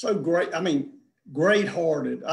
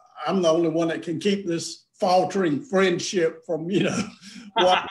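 plain

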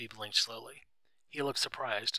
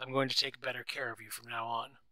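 usual speaking voice

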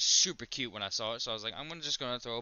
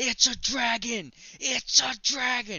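shrill, very high, thrilled shrieking; 12 semitones higher, 8 dB louder than usual. Recounting getting the Pokemon, the speaker re-enacts her excited scream. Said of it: "I was screaming like".

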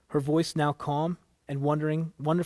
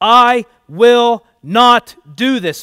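very loud, very slow, high, booming, drawn-out, boiling-over shout; 8 semitones higher, 15 dB louder than usual. Narrator voices a man arguing with a woman; yelling. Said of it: "Mac yelled".

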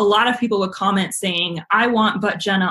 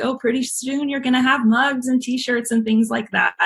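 light, teasing, pitched-up joking tone; 5 semitones higher than usual. Recalling how Cliff would always joke with you: imitating Cliff joking. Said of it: "Cliff would always joke with me like".

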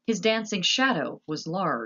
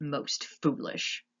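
muttered under the breath, quieter; 5 dB quieter than usual. Narrator reads Gregory lifting the plate cover after a shouted exchange, muttered. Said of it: "muttered Gregory".

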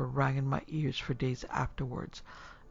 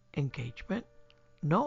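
usual speaking voice

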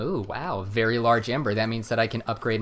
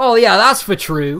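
very high, very loud, shrill fake British accent; 10 semitones higher, 12 dB louder than usual. Retelling advice to a girlfriend about sounding British: put-on British accent. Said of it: "I love doing a British accent".

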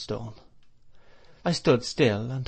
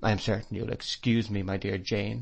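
ordinary delivery, nothing marked

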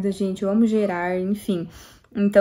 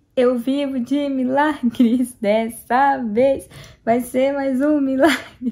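words drawn out very slowly through laughter; 4 semitones higher, 3 dB louder than usual. Speaking to her viewers, laughing while speaking. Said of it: "eu tô rindo".

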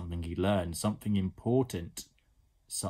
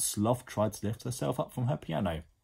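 plain reading voice

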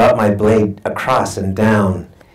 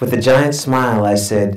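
usual speaking voice

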